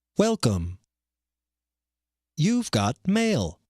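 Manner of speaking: imitated, put-on announcer voice. Doing today's impression, the guy from AOL: AOL announcer voice impression. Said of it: "today's impression is the A O L guy".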